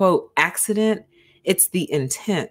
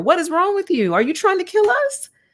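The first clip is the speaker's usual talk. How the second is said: acted, very high scream climbing in pitch; 11 semitones higher than usual. Recalling screaming at her after she threw the car into neutral, retelling a scream. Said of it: "Like I screamed at her".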